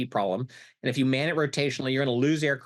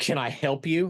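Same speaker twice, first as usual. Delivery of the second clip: mock-dismissive, unwelcoming tone, much slower. Retelling a major general's greeting at the Pentagon, in a dismissive tone. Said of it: "in that tone of voice that pretty much says".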